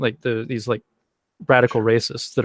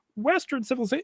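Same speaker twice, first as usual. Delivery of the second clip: very high, proclaiming announcer-like voice; 13 semitones higher, 7 dB quieter than usual. Mocking people who only listen to Jordan Peterson: Jordan Peterson voice. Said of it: "listen to Jordan Peterson's voice come out and go".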